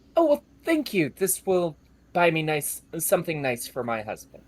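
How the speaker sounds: kinder, gentler, lilting voice. The narrator voices a woman thanking a player for fifty gold, kinder, gentler tone. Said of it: "shifts to something a little kinder and a little gentler".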